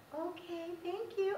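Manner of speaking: sweetest, kindest voice possible, pitched high. Retelling own reply to a landlord: imitating own sweetest, kindest voice. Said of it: "in the sweetest, kindest voice I could possibly imagine".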